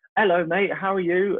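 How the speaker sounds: very high-pitched, casual delivery. Retelling greeting from Tom Hardy a month later: Tom Hardy voice. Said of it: "And his voice".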